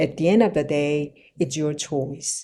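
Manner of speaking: deep, low, calm, soft, unbothered delivery. English speaking tip, avoiding a high tone: low, slow, calm voice. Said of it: "저음으로 그러니까 천천히 말하는".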